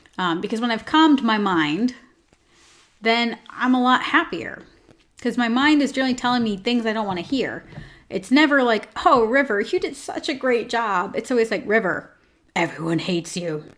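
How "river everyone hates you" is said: deep, dark, evil, menacing voice. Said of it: "It's always like this Batman voice too".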